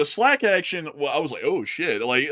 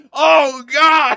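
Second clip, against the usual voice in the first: shrill, very high, loud, full-throated holler; 12 semitones higher, 9 dB louder than usual. Retelling how a rider on a jerking lift yelled: imitating Matthew yelling. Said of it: "started yelling".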